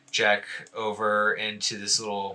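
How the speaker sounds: ordinary talk, nothing marked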